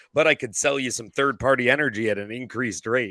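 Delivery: plain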